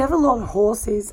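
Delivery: ordinary delivery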